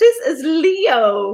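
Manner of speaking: slow, tearful voice, nearly crying. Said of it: "I'm gonna cry now".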